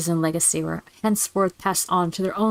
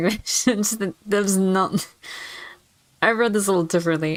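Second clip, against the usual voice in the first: giggly speech broken by laughter. Explaining a misreading of a game's opening line, laughing while talking. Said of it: "I'm sorry I'm laughing".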